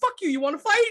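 very high-pitched, manic, frenzied rant. Retelling a driver's reply to a honking car: imitating Danny, manic. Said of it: "He's just still driving and ranting".

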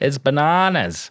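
high, bad Australian accent slipping into Indian. Comparing how different countries say a phrase: attempted Australian accent. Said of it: "I don't know why I sounded like an Indian uh".

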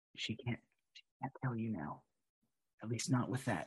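soft, hushed half-whisper. Voicing a character casting protection on someone: half-whispering in character. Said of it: "he whispers".

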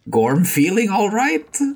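comic, very high, loud, swooping voice. A game narrator voices Arthwin stepping over to Gorm: comic imitation of Gorm's voice. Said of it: "he comically imitates his voice".

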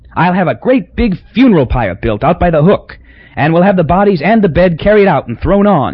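pleased, self-satisfied exclamation. A man plans aloud how to deal with the room: cried out, pleased with himself. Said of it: "he cried, really pleased with himself".

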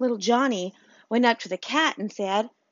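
ordinary talk, nothing marked

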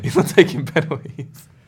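speaking through laughter. Joking about a centre back's goal tally: laughing while talking. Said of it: "What are you laughing at?".

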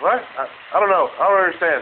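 high, loud, panicked, flustered voice. Answering a caller about the power company on the phone: panic in voice. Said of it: "fun, fu-, fucking panic in my voice".

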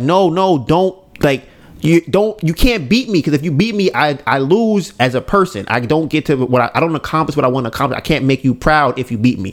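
ordinary delivery

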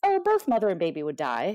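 bright, breezy, really chipper, loud and swooping. Retelling a doctor's reply about placenta previa: imitating a doctor speaking really chipper. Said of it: "really chipper".

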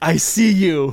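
yelled call with the volume held down. Recalling what they kept yelling during sleep paralysis, retelling a yell. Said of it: "I kept yelling over and over again".

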